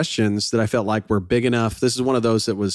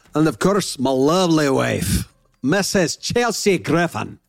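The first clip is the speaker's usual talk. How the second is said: put-on Scottish accent, higher; 4 semitones higher than usual. Introducing a co-host after being asked to: scottish accent. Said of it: "introduce me like you're Scottish".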